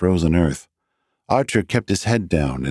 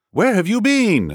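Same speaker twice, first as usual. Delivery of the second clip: very high-pitched, insistent, demanding tone; 13 semitones higher than usual. Narrator reads a character questioning another character, demanding. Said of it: "Wakefield demanded".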